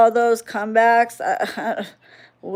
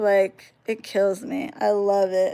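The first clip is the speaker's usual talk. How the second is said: ordinary talk, nothing marked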